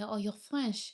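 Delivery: ordinary delivery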